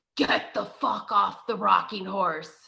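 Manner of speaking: deep, rough male voice. Retelling a spooky story about a rocking horse, deep man's voice. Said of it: "like this deep man's voice says".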